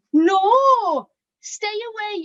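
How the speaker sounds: put-on high, wary childlike Welsh accent, drawn-out "no". Quoting a child from a case study who saw them at the stairs: Welsh accent. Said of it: "in a Welsh accent".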